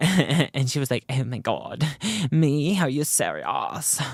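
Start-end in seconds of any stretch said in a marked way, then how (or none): 1.1-4.0 very slow, drawn-out, put-on Australian accent. Retelling a deleted film scene, the main scientist reacts, attempted australian accent. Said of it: "I'm trying to do Australian accent".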